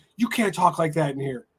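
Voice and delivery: ordinary talk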